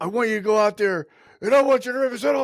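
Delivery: fired-up, high-pitched screaming. Recounting how coaches talked to 14-year-olds, imitating a screaming coach. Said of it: "he's like screaming".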